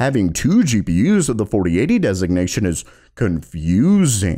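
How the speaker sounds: acted sarcastic, scornful, low, mocking tone. Speaker reads a company's stated reason for cancelling a GPU, in a mocking tone. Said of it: "I'm saying it in such a mocking tone".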